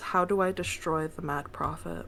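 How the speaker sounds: whispering. Asking a question in character, told to whisper: whispering the question. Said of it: "he's gonna whisper this".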